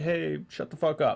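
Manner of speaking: normal talking voice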